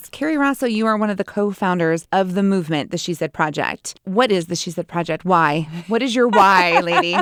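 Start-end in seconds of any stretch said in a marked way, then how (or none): 5.2-7.2 teasing, playfully accusing tone. Asking a co-founder what her why is: mock accusing tone. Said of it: "You don't need to say it so accusingly".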